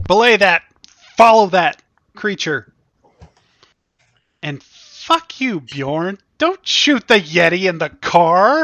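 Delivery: put-on shouting. Shouting orders at a driver during a chase: in-character yelling. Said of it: "are you yelling at him".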